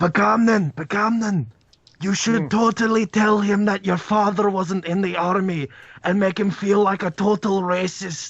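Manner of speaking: carrying stage whisper. Urging another player to tell a character something: loud whispering. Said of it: "Even though you're whispering".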